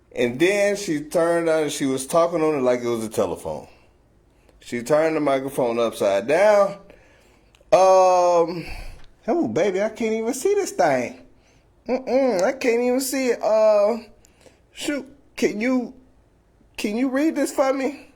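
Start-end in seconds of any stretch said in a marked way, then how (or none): 7.8-18.0 very high-pitched, chattering aunt voice. Retelling how an aunt talked into a microphone: imitating an aunt. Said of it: "with the microphone stuck to her head".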